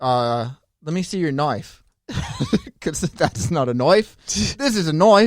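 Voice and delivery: loud, high, clumsy fake Australian accent. Attempting an australian accent after saying they can't: bad australian accent. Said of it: "that's all I know Australian".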